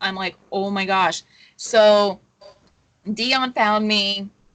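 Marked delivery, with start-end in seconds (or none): 0.5-1.2 put-on panicked crying voice, lower. Retelling being lost in a kitchen during a panic attack: retelling own panicked crying. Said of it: "I'm in a full-blown panic attack. I am crying".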